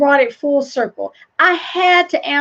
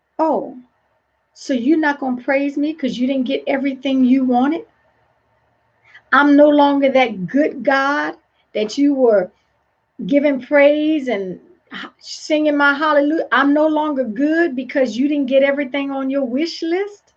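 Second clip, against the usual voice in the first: plain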